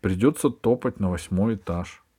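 plain reading voice

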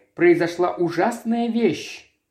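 ordinary delivery

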